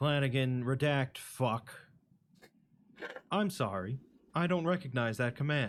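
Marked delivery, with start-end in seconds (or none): 3.3-5.7 computer assistant voice. Voicing the AI Flanagan refusing a command: voicing an AI assistant. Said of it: "assisted by an A I known as Flanagan".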